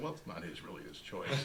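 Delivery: hushed, sly, confiding aside.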